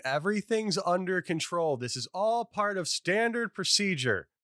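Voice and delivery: very high-pitched, shrill yelling. Player's character just got bitten on the arm, yelling. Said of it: "I'm also like yelling".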